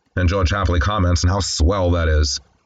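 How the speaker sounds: plain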